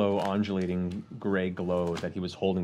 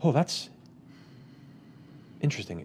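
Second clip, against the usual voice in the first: mock gasp of surprise, startled; 6 semitones higher than usual. Describing pulling back from something scary, acting out a gasp.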